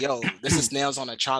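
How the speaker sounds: normal talking voice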